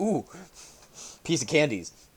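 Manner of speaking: put-on excited little-kid delight, gushing. Imitating the other speaker reacting to a game tip: imitating an excited little kid. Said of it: "he sounded like a little kid at the toy shop".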